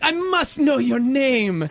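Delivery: crazy, exaggerated put-on Jamaican accent. Telling a story, the speaker imitates a woman calling Matt over, in a crazy Jamaican accent. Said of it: "this crazy Jamaican accent".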